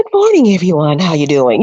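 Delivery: calm, soothing voice, gently swooping in pitch. Showing the voice used in motivational videos: soothing voice. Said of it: "I do the soothing".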